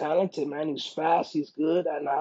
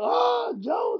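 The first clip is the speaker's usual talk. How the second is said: acted, very high, wild excited fan yell. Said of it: "I started going crazy too".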